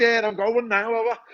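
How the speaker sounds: put-on English accent. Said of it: "so I started off talking like this".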